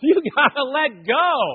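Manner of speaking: loud, high, slow yell. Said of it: "my wife yelling".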